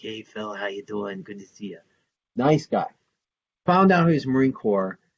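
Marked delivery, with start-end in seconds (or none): 0.0-1.8 put-on half-whispered, hushed, soft-spoken New Jersey accent. Describing a kind Marine veteran he met, imitating his half-whispery New Jersey accent. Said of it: "kind of like New Jersey accent, so he's just kind of whispery".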